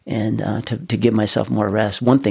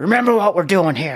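high-pitched mock coach voice, yelling; 9 semitones higher than usual. Retelling a phone call with a coach: imitating a coach yelling. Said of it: "my coach yells at me".

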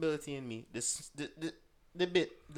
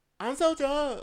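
put-on very high, loud girlish voice; 11 semitones higher, 8 dB louder than usual.

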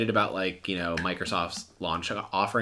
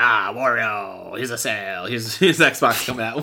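slow, drawn-out character voice, fully in character; 4 dB louder than usual. Imitating Wario announcing an Xbox sale: Wario voice. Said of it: "However he talks, right?".

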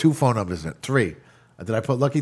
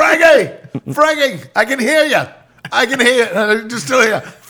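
mock yelling, much higher and slower; 11 semitones higher, 6 dB louder than usual. Retelling shouting into the phone at a caller who can't hear, retelling own yelling. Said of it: "And I'm yelling on the phone like".

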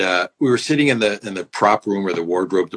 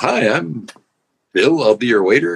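put-on perky waiter voice, slower; 4 semitones higher, 3 dB louder than usual. On a book tour, the speaker acts out a waiter greeting the table: imitating a perky waiter. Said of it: "this really perky waiter".

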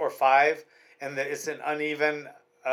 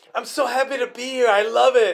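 put-on happy, lively Spanish accent, loud and high; 8 semitones higher, 6 dB louder than usual. Show how a fighter you love hearing talks, imitating a happy, animated spanish accent. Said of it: "He has like this Spanish accent, but he's so animated. He talks like this".

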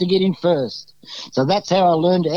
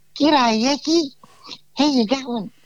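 put-on small, high-pitched little girl voice; 7 semitones higher than usual. Retelling meeting a player for the first time: imitating Nico's little girl's voice. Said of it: "he had this little girl's voice".

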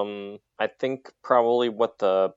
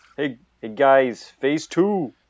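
put-on loud, high-pitched Brooklyn accent, called out. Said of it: "He's from Brooklyn".

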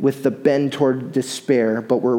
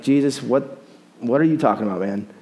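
put-on dismissive attitude with a scoff. Acting out a bible figure's reply, with mock scoffing attitude. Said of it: "he kind of says it with a little bit of attitude here".

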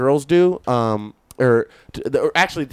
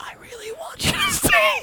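put-on very high, nauseous, queasy throw-up breath; 4 dB quieter than usual. Speaker recounts a sick woman asking him to stay, imitating a throw-up breath. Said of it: "like in her throw up breath".

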